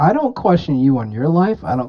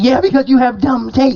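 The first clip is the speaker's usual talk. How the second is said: put-on scream, higher; 11 semitones higher, 3 dB louder than usual. Retelling how someone reacted when a mute was brought up: imitating someone screaming. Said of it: "why are you screaming at me?".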